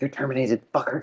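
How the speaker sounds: put-on angry, quiet, aggressive delivery after a pause. Quoting a movie line, with a small pause: imitating Sarah Connor, angry and aggressive. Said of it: "a small pause where she's like".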